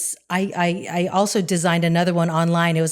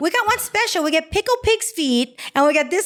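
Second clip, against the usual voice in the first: put-on sassy voice, higher; 12 semitones higher than usual. Retelling a comic's room service bit: imitating a sassy room service worker. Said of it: "the sassy room service guy's like".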